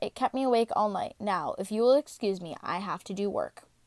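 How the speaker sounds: ordinary delivery, nothing marked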